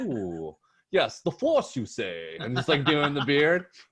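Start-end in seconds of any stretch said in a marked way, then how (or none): 0.0-2.4 slow, drawn-out, swooping sing-song pondering voice. Joking about stroking a beard while listening: Obi-Wan voice. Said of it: "In Star Wars, you know how he does this and listens? He's like".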